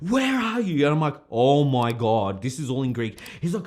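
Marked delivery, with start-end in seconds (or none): 0.0-0.8 very high-pitched, forceful screaming. Retelling a night out, the speaker acts out his father screaming at him on the phone: imitating father screaming. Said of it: "for him to be screaming at me".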